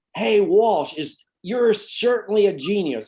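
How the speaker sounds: mock very high, drawn-out heckling yell. Retelling a fan yelling at the coach during a game: imitating someone yelling. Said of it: "somebody yells".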